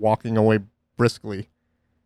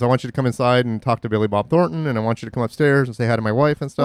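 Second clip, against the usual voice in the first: normal talking voice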